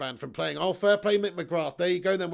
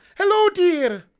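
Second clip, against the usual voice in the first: shrill, very loud, very high put-on Scottish woman's voice; 12 semitones higher, 10 dB louder than usual. Doing the character Robin Williams played, saying dear, Mrs. Doubtfire voice. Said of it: "High pitched Scottish woman saying dear".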